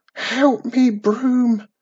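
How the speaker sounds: high, frantic shouted call. Trapped at a locked door as candles go out, she calls to her broomstick, shouting frantically. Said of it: "she shouted frantically".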